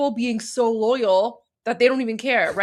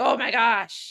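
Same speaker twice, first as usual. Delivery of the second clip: imitated disgusted tone. Imitating onlookers who stare at someone: imitating disgusted people. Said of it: "disgusted they are".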